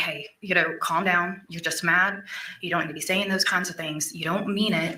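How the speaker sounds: normal talking voice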